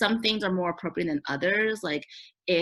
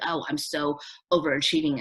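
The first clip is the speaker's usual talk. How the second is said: normal talking voice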